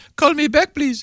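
put-on Indian accent. Imitating a caller asking for a call back: put-on indian accent. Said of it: "That's not a bad Indian accent".

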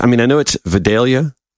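ordinary talk

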